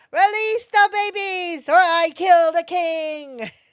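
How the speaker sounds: put-on very high, very loud, shrill, booming baby-talk shriek. In a dice-rolling game, the player's character is yelling in baby talk. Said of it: "In baby speak, I yell".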